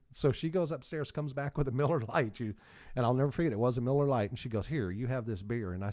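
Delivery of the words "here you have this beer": put-on older woman voice, strong Southern accent. Retelling a story, quoting Mrs. Buffett in a real strong Southern accent. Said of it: "real strong Southern accent".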